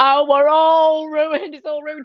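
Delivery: high, loud, despairing, distraught screamed wail. Retelling filling a paddling pool during a flood: imitating own past screaming.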